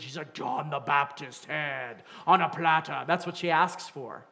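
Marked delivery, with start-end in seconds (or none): 0.3-3.0 put-on young woman's voice suddenly dropped deep. Retelling the young lady's request to the king: imitating her deepened voice. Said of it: "I imagine her voice deepens".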